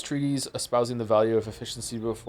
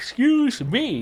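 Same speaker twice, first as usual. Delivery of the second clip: mid-yawn, pitched much higher; 13 semitones higher, 6 dB louder than usual. Speaker excusing themself, yawning. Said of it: "I can't stop yawning".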